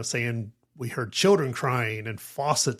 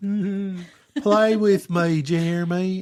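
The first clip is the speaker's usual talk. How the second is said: put-on ghost child voice, higher and louder; 7 semitones higher, 4 dB louder than usual. Imitating a ghostly eight-year-old child calling to someone: imitating a ghost child. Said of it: "I don't know what accent that was".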